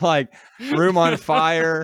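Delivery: loud, slow, laughing mock panic yell.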